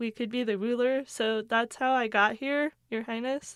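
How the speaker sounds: ordinary delivery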